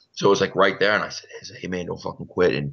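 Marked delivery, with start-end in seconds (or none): 1.6-2.6 put-on whisper. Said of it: "our whispering conversation".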